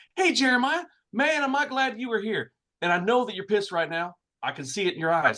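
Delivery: put-on kid's slightly urban speech. Retelling what a kid at the dealership said: imitating a kid's urban way of talking. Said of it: "kinda spoke a little bit urban".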